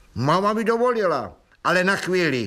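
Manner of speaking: lofty, superior voice. Honza tells Anička his mom let him, but only briefly: haughty. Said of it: "řekl zvysoka Honza".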